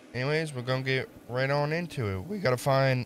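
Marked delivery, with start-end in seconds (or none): 2.0-3.0 voice breaking and cracking mid-phrase. Starting an Alan Wake playthrough video, voice cracking. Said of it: "my voice cracked".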